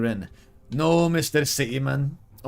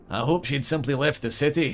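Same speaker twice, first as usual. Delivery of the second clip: vaguely Scottish, attempted, put-on accent. Narrating a scene, the speaker voices a dwarf in a vaguely Scottish accent. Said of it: "Is this a Scottish accent?".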